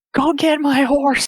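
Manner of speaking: very high, loud shouted call-out. In a tabletop game, a player's character calls after a departing man, shouting. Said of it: "I shout to him".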